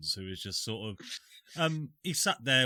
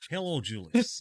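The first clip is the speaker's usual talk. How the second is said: put-on Scottish accent lost, drifting into Texan accent; 5 semitones higher than usual. Greeting someone while trying a Scottish accent that has gone Texan. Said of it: "I've lost the Scottish accent".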